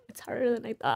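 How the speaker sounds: tearful, choking up, holding back tears. Sharing how tough being a stay-at-home mom has been, tearful, starting to cry. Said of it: "I was not expecting to cry".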